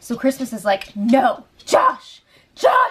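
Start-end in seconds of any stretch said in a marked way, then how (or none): 1.0-2.9 furious, livid shout. Retelling how Christmas calls after Josh as he walks away: imitating a livid shout. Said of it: "she's livid".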